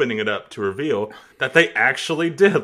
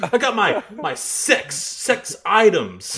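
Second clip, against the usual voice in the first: high, slow, stumbling childish put-on voice; 8 semitones higher than usual.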